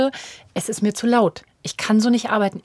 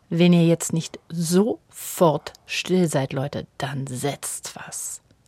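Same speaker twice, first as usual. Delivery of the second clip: very hushed, slow, drawn-out menacing tone; 5 semitones lower than usual. Coming into the children's room to tell them to be still, very quiet scolding. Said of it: "das kann ich sehr leise sagen ... Und es ist ganz leise".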